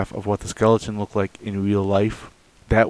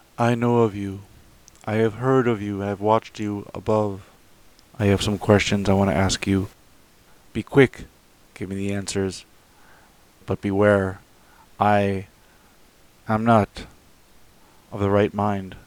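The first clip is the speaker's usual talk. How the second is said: imitated mock dead-like lifeless voice. Retelling what a woman said to them, imitating a dead-like voice. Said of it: "she continued in that same dead-like voice".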